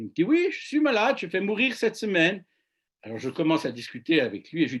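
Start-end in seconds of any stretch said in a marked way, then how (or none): 0.2-2.4 put-on French with a heavy German accent, pitched up. Retelling what a sick man answered the speaker, in a strong german accent. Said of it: "avec son fort accent allemand".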